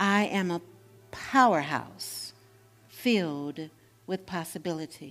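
halting, each word set apart by a pause. Leading listeners in repeating an affirmation: pausing between words. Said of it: "Taking a pause between the words".

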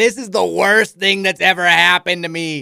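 put-on thick, laid-on Midwestern accent, loud and high. Quoting what a man said to the speaker, in a thick Midwestern accent. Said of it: "he has this thick Midwestern accent".

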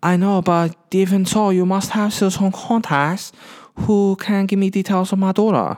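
put-on Chinese accent. Retelling a film scene, imitating Jackie Chan's accented English. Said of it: "he still speaks kind of like".

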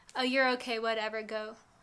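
ordinary delivery

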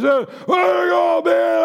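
hearty, boisterous outburst. Recounting a man who stood up and called after someone, retelling his big boisterous voice. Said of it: "he's in his big boisterous voice".

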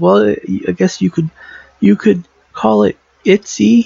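high, put-on creepy voice said sweetly. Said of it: "And he goes".

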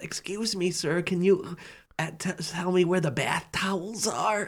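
put-on hushed, very soft little old lady voice. Retelling how an old lady at Target asked for towels: imitating an old lady. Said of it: "Some old lady comes to me and goes".

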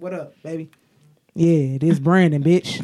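very loud, deep, put-on manly voice. A woman shows friends how she answers the phone, deep masculine voice. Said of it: "your voice deeper".

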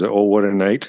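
ordinary talk

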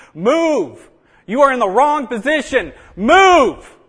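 screamed very high and very slow, booming, drawn-out. Acting out a commanding officer on the radio: commanding officer screaming. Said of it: "the commanding officer is screaming".

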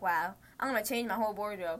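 ordinary talk, nothing marked

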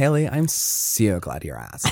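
put-on sing-song, swooping Valley Girl accent. Reading the show's info after others ask for it: Valley Girl voice. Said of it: "as a yodeler or as a Valley Girl?".

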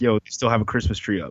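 ordinary delivery

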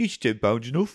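Birmingham accent. Asked to say a set line in his Birmingham accent: Brummie accent. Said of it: "Could you say, I'll say to you, is £10 enough?".

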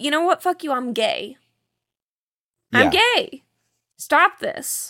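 put-on furious, fed-up angry outburst. Retelling how he snapped back when she got really pissed, retelling an angry outburst. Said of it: "he gets really pissed and he's like".

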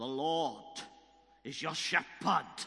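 put-on very loud, thick, broad Welsh accent. Retelling a prophecy a man gave him at his new church, broad Welsh accent. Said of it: "this broad Welsh accent".

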